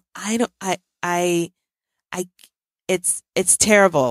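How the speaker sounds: slow, halting stutter with false starts. Speaker bracing to say something they call terrible, stuttering. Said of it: "I'm stuttering right now".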